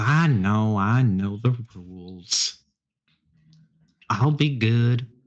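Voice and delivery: playfully exaggerated, pouty voice.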